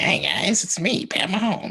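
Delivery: very high, froggy puppet voice. Told he sounds like Kermit, joking with friends: Pat Mahomes impression. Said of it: "like Kermit".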